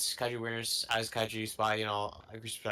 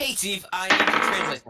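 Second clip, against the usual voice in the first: loud, high voice, projecting a notch too much; 9 semitones higher, 6 dB louder than usual. Calling up Steve to ask for a translation: loud voice. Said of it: "kinda loud".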